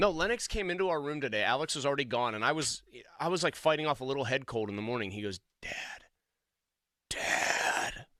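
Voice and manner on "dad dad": low, ghostly muttering voice. Retelling how his son muttered to him from beside the bed: Grim Reaper-like mutter. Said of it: "You sound like the Grim Reaper".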